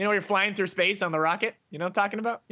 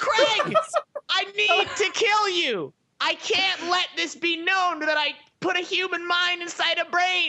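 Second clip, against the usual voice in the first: very high, fervent, impassioned put-on screaming; 10 semitones higher than usual. A game's boss character confronts the man turned into a mouse, screaming passionately. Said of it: "He's screaming".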